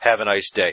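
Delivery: mock sarcastic tone. Reading out the own reply to a rude commenter: sarcastic sign-off. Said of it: "put that sarcasm at the end".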